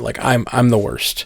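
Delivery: crestfallen, deflated, downcast dejected tone. Retelling a scene where Mark looks in the mirror: imitating crestfallen Mark.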